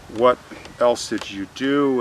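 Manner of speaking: plain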